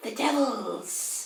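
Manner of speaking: put-on high, hissing old-woman voice. Speaker voicing a hag's disembodied voice to the players: hissing hag voice. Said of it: "hisses the hag's disembodied voice".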